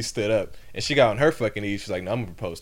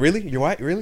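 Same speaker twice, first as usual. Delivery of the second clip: thrilled, excited, high-pitched, incredulous tone; 8 semitones higher, 5 dB louder than usual. Recapping a show scene where a man reacts to a woman, imitating an excited guy. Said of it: "got excited".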